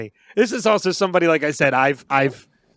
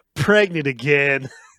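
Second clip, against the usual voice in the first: slow, sad, resigned voice. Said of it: "when he sounds so sad".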